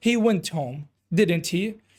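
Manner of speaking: ordinary talk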